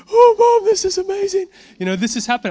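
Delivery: play-acted, very high, loud teenage-girl crying voice. Retelling kids calling their moms on speaker after miracles, imitating teenage girl crying. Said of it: "my best teenage girl crying voice".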